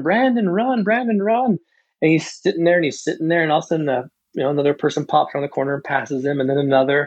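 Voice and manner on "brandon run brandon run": mock, high-pitched, screamed cheering. A coach retelling cheering on an athlete at a race, imitating screaming. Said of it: "and I'm screaming".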